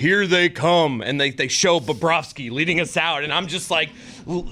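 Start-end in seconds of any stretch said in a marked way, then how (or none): 0.0-1.0 stadium intro announcer delivery. Retelling being at a game, the speaker imitates the intro announcer: deep announcer voice. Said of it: "it's like that deep voice. It's like their intro voice guy".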